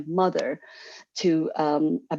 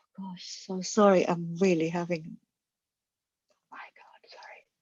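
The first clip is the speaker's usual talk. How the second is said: overcome, choked-up, emotional voice, breaking off; 4 dB quieter than usual. Describing a london lifestyle, the speaker breaks off, choked up with emotion. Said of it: "emotional for".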